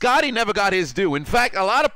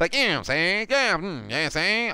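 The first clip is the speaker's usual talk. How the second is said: put-on old-time 1930s gangster voice, mobster patter; 4 dB quieter than usual. Showing how 1930s gangsters spoke, in 1930s gangster talk. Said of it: "how they say the uh the gangsters in the nineteen thirties spoke".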